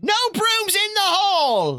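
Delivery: very high, stern shout with "hall" drawn out. Narrating the players walking through the halls, voicing a teacher shouting. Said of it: "you hear the voice of a teacher shout out".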